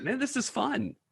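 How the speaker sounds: high, soft, amused aside voice.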